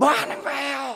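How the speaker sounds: loud furious shout.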